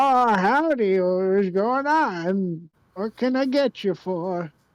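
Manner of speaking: put-on slow elderly shopkeeper voice, drawing out "on". Voicing the old man behind the general store counter greeting customers: old man shopkeeper voice. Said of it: "the old man behind the counter comes up and he's like".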